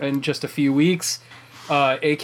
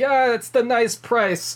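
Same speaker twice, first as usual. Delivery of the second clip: put-on higher-pitched elderly New York man voice; 9 semitones higher than usual. Imagining an old man eating at a new york deli: old new york man voice. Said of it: "an old man eating at Katz's Deli in New York".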